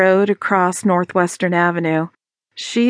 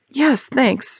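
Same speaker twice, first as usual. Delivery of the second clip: higher, indistinct mumble, words running together; 6 semitones higher than usual. [name] answers Sarah after she hands him his sweater, mumbled. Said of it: "he mumbled".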